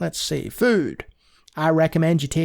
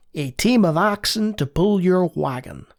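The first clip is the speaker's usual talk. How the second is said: put-on American-accented voice. Playing Oregon Trail aloud, reading the game's lines in a put-on American accent. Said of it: "I'm going to keep doing it".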